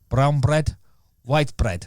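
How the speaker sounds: put-on South African accent. Showing how easy a south african accent is: south african accent. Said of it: "a South African accent is easy to do if you say".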